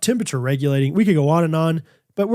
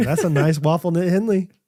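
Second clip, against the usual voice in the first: ordinary talk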